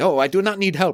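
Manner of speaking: put-on German accent, pitched very high, loud. Retelling Lancer spilling coffee and refusing help: Lancer in German accent. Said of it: "like with a German accent".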